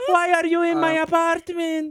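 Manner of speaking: put-on very high, loud old woman voice, slight accent. Voicing an old lady whose door was kicked in: old lady with a slight accent. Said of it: "she has a little tiny accent".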